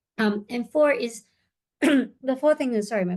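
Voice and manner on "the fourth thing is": slow speech with voice cracking. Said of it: "my voice is breaking there".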